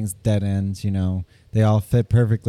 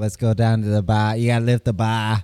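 put-on Boston accent. Recalling a man he used to watch, doing a Scott Herman Boston accent. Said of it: "his accent was like that".

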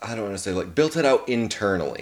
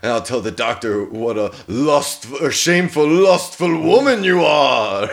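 put-on voice with Eastern European accent; 3 semitones higher, 4 dB louder than usual. Quoting a movie character's line from a bed scene: David's Eastern European accent. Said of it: "He does, like, the Eastern European accent".

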